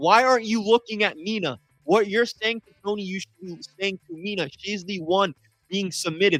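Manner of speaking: mild, fed-up, exasperated yell. Retelling yelling at a referee while watching a match: imitating own screaming. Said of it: "I'm sitting here screaming".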